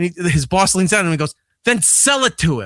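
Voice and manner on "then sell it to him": imitated voice full of attitude. Retelling how the boss told the worker to sell it: imitating boss with attitude.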